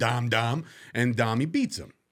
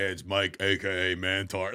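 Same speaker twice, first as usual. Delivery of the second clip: low voice, very slow, words drawn out; 4 semitones lower than usual. Retelling the voicemails a guy left a friend: imitating Mantar. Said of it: "He's like".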